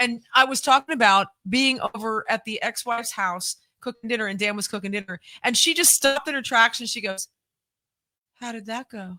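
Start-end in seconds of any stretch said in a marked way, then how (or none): 8.4-9.2 flat, expressionless delivery. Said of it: "Like, all stone faced".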